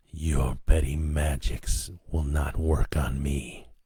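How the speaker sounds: low, hollow hissing chorus of many voices. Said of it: "it hissed in that horrid hollow chorus".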